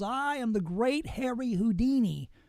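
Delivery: slow, drawn-out, grand proclaiming tone. Speaker retelling a magician confronting a fake medium on stage, Harry Houdini's booming yell. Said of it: "with a loud booming voice pulls off his hat".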